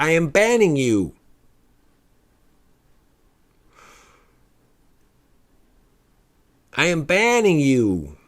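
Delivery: put-on severe store-clerk voice, very stern and firm. Recounting being banned from a store, imitate the woman's very stern voice. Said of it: "She's a very stern voice".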